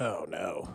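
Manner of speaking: put-on let-down, dismayed, disappointed voice. Retelling how a father reacted to an explanation: imitating disappointed reply. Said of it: "just even more disappointed in us".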